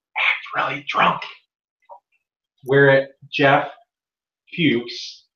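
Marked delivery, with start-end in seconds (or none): 0.2-1.3 mock under-breath mutter, faster. Retelling what another person said once everyone went quiet, muttered under breath. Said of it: "say under his breath".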